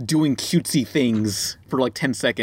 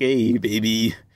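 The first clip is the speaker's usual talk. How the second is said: put-on sleazy French accent; 3 semitones lower than usual. Describing someone's icon, the speaker voices it as a sleazy French person. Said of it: "some sleazy, like, French person just like".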